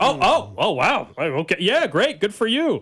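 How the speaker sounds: acted shock, high, swooping, words stretched out. Imitating another speaker's reaction to news of a professor job: imitating someone sounding shocked. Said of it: "You sounded shocked when I said that".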